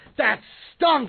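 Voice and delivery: loud, high-pitched shout. Recalling talking to a man and his kids after a movie, retelling a yell. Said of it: "And I'm yelling at them".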